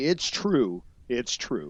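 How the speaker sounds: animated, slow, drawn-out delivery with big pitch swoops. Quoting a catchphrase after another speaker's story: Kurt Angle impression. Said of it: "As, uh, Kurt Angle would say".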